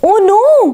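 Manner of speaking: alarmed, high outcry. Amma realizes the wedding mithai boxes were left upstairs; crying out in alarm. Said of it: "cried Amma".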